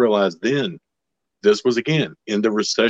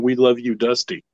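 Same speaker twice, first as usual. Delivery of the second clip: put-on scream like a crowd; 3 semitones higher than usual. Retelling the crowd's answer: imitating a crowd screaming. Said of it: "they're screaming".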